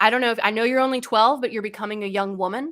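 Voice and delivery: put-on very serious, grave tone. Retelling a warning given in the car: imitating someone getting really serious. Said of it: "he gets really serious".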